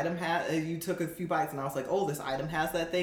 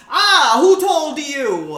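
very high, loud, shrill, booming, drawn-out mock rage; 9 semitones higher, 16 dB louder than usual. Acting out how the pizza man reacts when angry: imitating Tony getting pissed off. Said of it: "He gets really pissed off".

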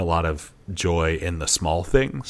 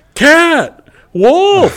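put-on overjoyed exclaiming, very high and very loud; 13 dB louder than usual. Speaker acts out her reaction to each animal on TV, imitating happy excitement. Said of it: "Like so happy about it the whole time".

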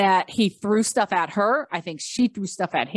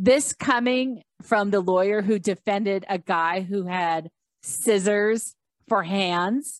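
normal talking voice

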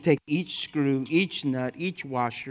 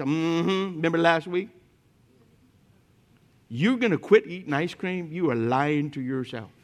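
put-on wicked, tempting character voice; 2 semitones higher than usual. Contrasting voices a listener hears, speaking as the devil: devil's voice. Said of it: "the devil's voice".

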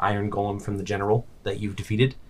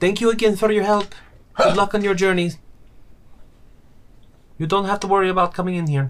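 very high royal princess voice; 11 semitones higher than usual. A narrator voices the princess replying to Dallin, princess voice. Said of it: "but in Princess's voice".

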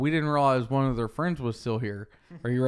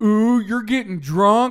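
loud, high-pitched, teasing, jeering voice; 8 semitones higher, 8 dB louder than usual. Retelling what the loudmouth kid down the street said, imitating him saying it really loud. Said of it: "like, really loud".

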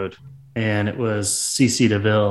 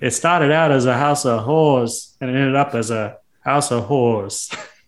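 weak, attempted New Jersey accent; 3 semitones higher than usual. Quoting a man with a thick accent, in an attempted new jersey accent. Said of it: "I cannot do a New Jersey accent".

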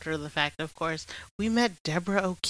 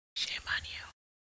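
very quiet, breathy, barely audible hushed whisper. Repeating the scolding quietly so the recording isn't cut off: whispering. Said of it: "now I'm whispering".

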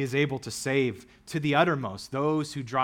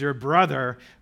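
sarcastic, mocking tone, louder; 6 dB louder than usual. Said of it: "I'm adding that in".

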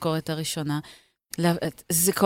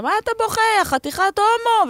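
very high screamed outburst; 3 dB louder than usual. Retelling what a mother outside kindergarten screamed at her son, retelling a scream. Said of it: "והיא צעקה".

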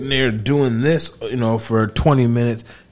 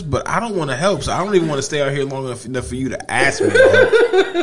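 high, laughing mocking whine. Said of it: "You were just kinda like".

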